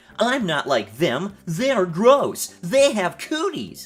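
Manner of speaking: put-on flamboyant camp voice, indignant, slow, huffy, drawn-out.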